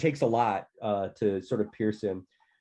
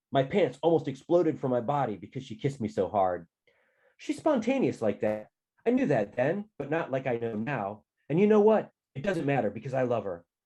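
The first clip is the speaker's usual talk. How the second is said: ordinary delivery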